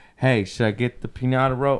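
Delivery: normal talking voice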